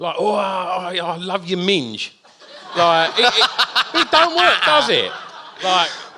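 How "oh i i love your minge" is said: fake, put-on throes-of-passion voice. Showing how a passionate line sounds in an English accent: mock passionate lover's line. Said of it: "in the throes of passion".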